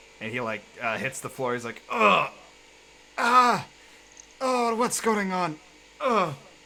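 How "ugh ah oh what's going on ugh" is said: high, drawn-out pained groans. Voicing a character who collapses and hits the floor: groaning in pain. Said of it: "groans in pain a little bit".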